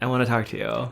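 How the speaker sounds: put-on frustrated tone. Retelling how someone told a crying person to stop: imitating a frustrated voice. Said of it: "some frustration in his, like, voice".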